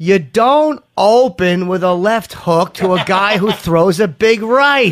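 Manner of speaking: loud, very slow, condescending delivery. Repeating a critic's remark to the fighter: condescending tone imitating Forrest Griffin. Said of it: "same condescending, cunty tone that Forrest Griffin said it in".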